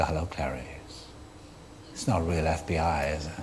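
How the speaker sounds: sane, unemotional, menacing calm in low cold voice. An actor talks about playing a killer calmly, then demonstrates the phone voice in a calm, cold voice. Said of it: "Have you ever used that voice".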